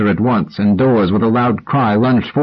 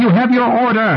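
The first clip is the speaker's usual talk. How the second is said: screeching cry, very high shriek; 13 semitones higher than usual. Reading a story, a character shouts at the sergeant during a standoff, shrieking. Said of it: "shrieked Rachel".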